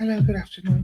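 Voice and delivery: put-on innocent voice. Imitating Red Room greeting people door to door: imitating Red Room acting innocent. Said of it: "He's doing very innocent".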